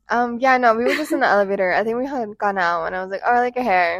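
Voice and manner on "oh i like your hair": ordinary delivery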